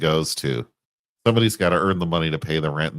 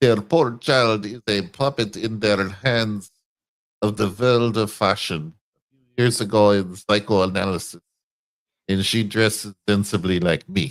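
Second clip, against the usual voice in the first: put-on weird German accent, higher pitch; 4 semitones higher than usual. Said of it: "with some kinda, like, weird German accent".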